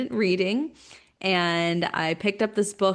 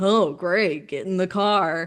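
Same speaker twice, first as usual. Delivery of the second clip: put-on angry sarcastic voice. Retelling how a parent read a book aloud, imitating an angry sarcastic parent. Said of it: "really angry and sarcastic".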